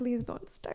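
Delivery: put-on frantic, panicked, breathy whisper. Retelling how the mother panicked next to the speaker: imitating a panicking mother. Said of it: "She was panicking next to me".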